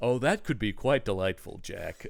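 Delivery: low, hushed put-on voice, kept soft. Acting out a made-up exchange between two actors: Tony Randall impression. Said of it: "my first attempt at a Tony Randall impression".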